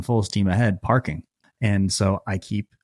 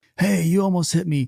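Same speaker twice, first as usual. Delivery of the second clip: very high, frantic, freaked-out screaming; 9 semitones higher than usual. Retelling a driver at the car window: imitating someone screaming. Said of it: "he just starts screaming at me".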